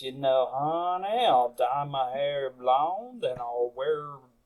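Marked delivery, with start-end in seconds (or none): 0.0-1.2 put-on accent of a Southern woman. Joking about making himself obnoxious, switching to talk like this: Daisy Duke voice. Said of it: "I'll start talking like this".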